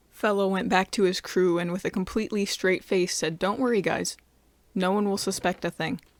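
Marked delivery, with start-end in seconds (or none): none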